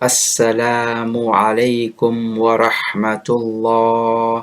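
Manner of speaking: very slow, overstretched, drawn-out delivery. Showing how some overstretch the taslim in prayer: drawn-out Assalamu alaykum. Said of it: "This is far too stretched out".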